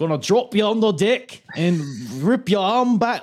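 bad put-on Scouse accent. Quoting what one fighter told another before the match, the speaker does a bad Scouse accent. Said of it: "that's possibly the worst Scouse accent I've ever heard".

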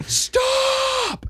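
"stop" screamed, high and piercing. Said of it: "Michael Caine looking motherfucker screams".

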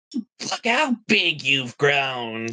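gushing, effusive, doting aunt voice. Describing relatives seen only at Christmas, imitating an aunt at Christmas. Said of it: "they have like one of those ugly ass sweaters on, and they're just talking about".

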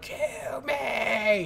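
high, far-off, begging zombie voice. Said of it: "when they're like".

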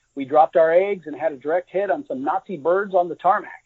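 usual speaking voice

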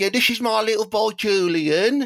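put-on London accent. Trying the name out in different regional accents, London accent. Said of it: "from London".

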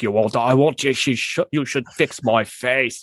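put-on rough British accent, slowed down. Describing a wished-for prequel, the speaker quotes the character: Karloff low-class British accent. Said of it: "doing this like real low end British accent".

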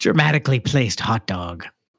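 playful, put-on stage Irish accent. Reading out a patron's name on the show, in an Irish accent. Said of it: "Was that an Irish accent?".

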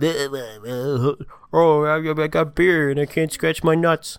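put-on very slow, high, stumbling, stammering drunken ramble. Rating a place, imitating drunk fifty-year-old men there: imitating drunk Wisconsin men. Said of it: "the drunk Wisconsin, like, seventy-year-old men were like".

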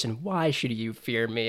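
put-on menacing character voice. Acting out a master questioning his new Padawan, Dooku's mock-intimidating voice. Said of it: "in your most intimidating voice".

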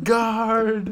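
high-pitched, loud, desperate screaming.

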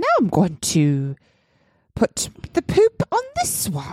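sing-song, swooping put-on British accent. Acting out what a man touching every screen said, in a british accent. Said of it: "What's the British accent?".

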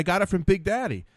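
ordinary talk, nothing marked

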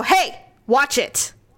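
sharp, snappy tone. Retelling a warning to a stranger in a store: retelling snapping at someone. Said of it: "while I'm snapping at him".

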